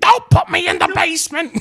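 shrill, very loud, high shrieking voice. Asked for audio after the voice is named: Norman Bates' mom voice. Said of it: "Norman Bates' mom is what it is".

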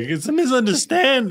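very high-pitched, tearful crying, pleading voice. Retelling being drunk in the drunk tank and seeing mom: imitating own past crying. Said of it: "I was crying".

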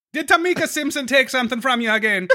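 put-on sudden shift into a Jamaican accent. Speaker playing a community officer in a bit, slipping into a Jamaican accent. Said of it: "I turned Jamaican at that last part".

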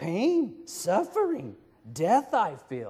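very slow, high, swooping, drawn-out character voice. A dad quoting a Master Yoda line, doing a Yoda voice. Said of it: "Should I do the Yoda voice? He's all".

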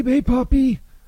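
laughing, mock Puerto Rican accent.

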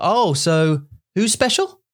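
positive, genuinely curious, slow, interested, upbeat tone. Repeating a practice sentence after someone, interested and positive. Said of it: "then just repeat the sentence and then with interest and with positivity".

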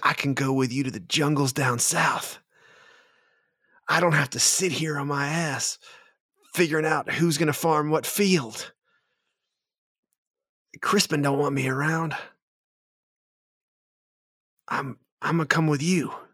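high, delighted, eager, overjoyed outburst. Narrator voices Florn speaking to the party: overjoyed Florn. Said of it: "But Florn looks just overjoyed".

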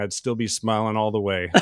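ordinary talk, nothing marked

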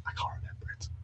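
hushed whisper, under the breath. Talking with someone on a podcast, whispering. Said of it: "I don't know why I'm whispering".

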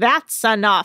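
put-on British accent. Retelling Captain Lee ending the drinks: British accent imitating Captain Lee. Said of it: "I don't know why he has a British accent".

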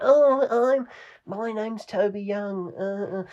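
deliberately inaccurate mocking voice, high and slow. Showing a deliberately inaccurate mocking impression: deliberately bad Toby Young impression. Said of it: "deliberately not accurate, but he's just ripping the piss".

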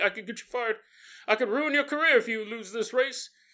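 taunting, needling jibing tone. Acting out a jogging president taunting his agents: imitating trash talk. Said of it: "trash talking them the whole way".

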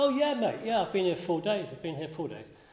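put-on Manchester accent with the pitch lifted. Retelling what a man he was unsure about said to him, in a Manchester accent. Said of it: "he said it in a manchester accent".

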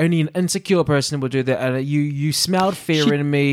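ordinary talk

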